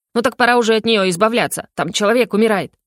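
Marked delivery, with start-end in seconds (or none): none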